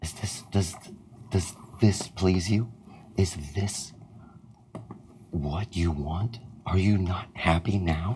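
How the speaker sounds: loud, hushed, audible stage whisper. In a game, the speaker's character whispers audibly to the group, loud stage whisper. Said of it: "I reach out and I and I whisper".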